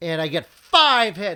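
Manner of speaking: full-volume, very loud shouting yell. Playing a tabletop game, announcing a roll result into the mic, yelling. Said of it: "Sorry to yell in the mic".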